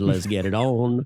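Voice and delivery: put-on deep voice.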